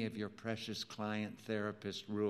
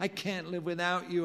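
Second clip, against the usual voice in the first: groaned; 8 semitones higher than usual. Narrator, grappling with Rachel on the office rug, answers her snarl, groaning. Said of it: "I groaned".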